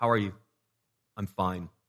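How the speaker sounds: imitated quiet flat grumbling. Showing quiet grumbling: imitating quiet stone-faced grumbling. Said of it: "your grumbling is just quiet".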